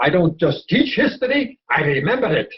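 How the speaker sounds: thick, theatrical put-on Polish accent, swooping, dramatic. Quoting a father's saying about teaching history: imitating a father's heavy polish accent. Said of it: "he had a heavy Polish accent in a very dramatic manner".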